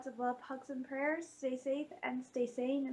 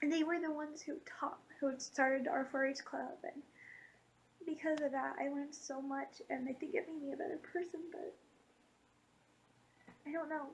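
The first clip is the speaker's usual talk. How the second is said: crying while speaking, tearful. Remembering the relatives who started the 4-H club, crying. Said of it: "I need to stop crying".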